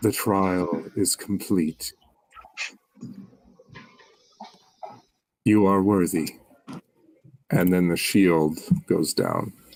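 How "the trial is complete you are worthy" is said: low, hushed, half-whispered delivery. Voicing an unseen speaker as a trial ends: low half-whispery voice. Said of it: "the same low, whispery kind of voice".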